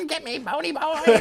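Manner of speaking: squeaky, very high cartoon villain screech. Describing a little guy taunting from between two trolls: Skeletor voice. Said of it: "he's in Skeletor voice".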